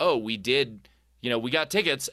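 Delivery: put-on gushing, thrilled, bubbly excited burst. Retelling his girlfriend's news that spoiled his proposal plan, mock-excited. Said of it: "When she told me so excitedly".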